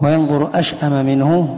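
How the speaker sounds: ordinary talk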